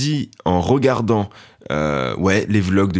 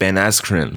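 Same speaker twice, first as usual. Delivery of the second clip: name said with English pronunciation. Saying how the English pronounce a fighter's name: English accent on the name. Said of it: "Les Anglais, ils sont là genre".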